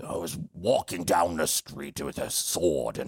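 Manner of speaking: put-on elderly English gentleman accent. Trying out different voices with others, the speaker does an old English gentleman voice. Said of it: "if I'm an old English gentleman".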